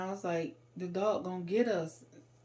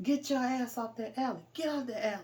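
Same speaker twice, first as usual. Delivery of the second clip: mock angry, bossy, yelling voice; 5 semitones higher than usual. Retelling an unseen man's voice yelling at them, imitating an angry yell. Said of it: "this angry voice yelling".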